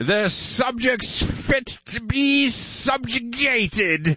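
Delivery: very high, regal proclaiming voice. On a live show, speak about the subjects in a King George impression. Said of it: "That's my impression of".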